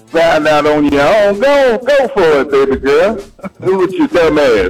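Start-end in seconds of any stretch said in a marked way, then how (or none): 1.4-4.7 sarcastic, mock-encouraging tone dripping with sarcasm. Speaking to someone whom other women already warned about a man, sarcastic. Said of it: "Sound like you being sarcastic".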